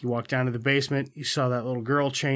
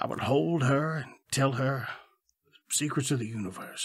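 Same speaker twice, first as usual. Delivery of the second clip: quieter, charming put-on Southern accent; 4 dB quieter than usual. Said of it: "That's very good".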